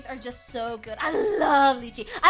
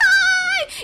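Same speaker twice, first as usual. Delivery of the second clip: much louder, much higher pitch; 7 dB louder than usual. Greeting someone by name mid-conversation, loud greeting. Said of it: "You're gonna wake up my whole house".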